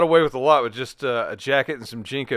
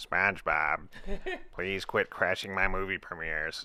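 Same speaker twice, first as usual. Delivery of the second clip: put-on cartoon squid character voice; 5 semitones lower, 9 dB quieter than usual. Doing a requested cartoon voice, addressing SpongeBob: Squidward voice. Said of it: "do Squ-, Squidward".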